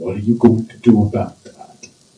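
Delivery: low, fretful, dread-filled, fearful and worried tone. Retelling what well-meaning people say, imitating a fearful voice. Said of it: "they say it with like this fearful voice".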